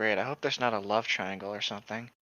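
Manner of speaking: quiet muttered whisper. Voicing a character in a car who mutters a complaint: whispering under her breath. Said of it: "Taika's gonna whisper under her gre-, breath".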